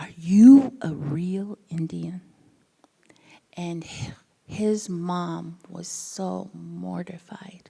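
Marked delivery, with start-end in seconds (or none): 0.0-2.2 very loud, wonder-struck, put-on child voice gasping in awe. Retelling what a little boy asked on her second day: imitating a child gasping in awe. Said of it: "and gasped and said".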